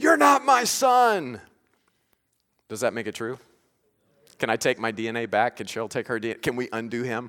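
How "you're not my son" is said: very high, very slow, drawn-out furious scream. Acting out a father shouting after his son as he drives off: acting out screaming after a son. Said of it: "I'm screaming after him".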